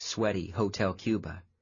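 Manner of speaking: ordinary delivery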